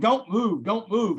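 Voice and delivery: loud, high-pitched screaming voice. Retelling a police raid with a boot on the chest: imitating a cop screaming. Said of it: "he's screaming".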